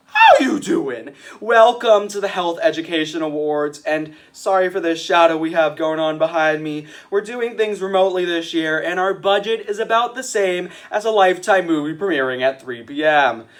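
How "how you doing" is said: upbeat talk-show host voice. Greeting the audience by quoting Wendy Williams. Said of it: "to quote Wendy Williams".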